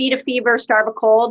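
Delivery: normal talking voice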